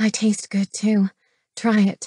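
ordinary delivery

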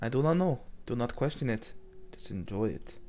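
put-on sultry, seductive Russian accent. Speaker suddenly goes Russian after a door closes on them: seductive Russian accent. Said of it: "The seductiveness of the Russian voice".

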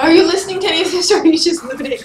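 fast, loud, exasperated nagging tone, blurted out.

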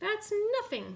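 very high-pitched cackling. Kookaburra, up in the sky, answers Wombat, cackling. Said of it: "cackled Kookaburra".

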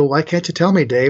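ordinary delivery

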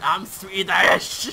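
put-on Scottish-accented voice. Retelling what someone shouted jumping out of a helicopter, imitating a scottish accent. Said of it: "In a Scottish accent".

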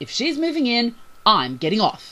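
very loud scornful yell. Bailey, on the ship's deck with her belongings, yells; loud scornful yell. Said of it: "Bailey yelled in a loud, scorn-filled voice".

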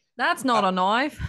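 loud, high-pitched, belted delivery. Quoting a movie line among co-hosts: Crocodile Dundee voice. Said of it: "you know Crocodile Dundee".

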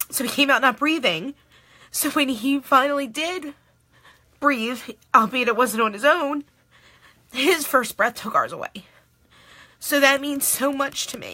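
speaking through tears. Speaker presenting an item available tomorrow, crying while talking. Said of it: "I can't believe I'm crying".

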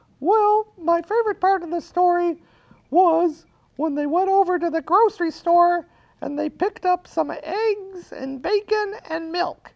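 very high, piping little puppet character voice. Answering the storyteller's question as the puppet, use the Baba Looey puppet voice. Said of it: "He lives in the cactus house right here".

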